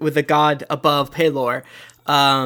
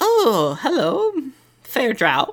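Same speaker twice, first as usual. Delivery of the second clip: put-on witch character voice; 9 semitones higher than usual. Voicing the Woods Witch greeting a drow: Woods Witch character voice. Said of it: "every N P C has to comment on it".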